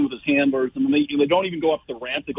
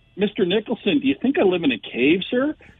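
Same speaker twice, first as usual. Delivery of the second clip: cheeky, snarky, sarcastic tone with swooping pitch; 6 semitones higher than usual. Retelling own retort to Mister Nicholson on a flight: imitating own snarky retort. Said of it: "You just snarked him".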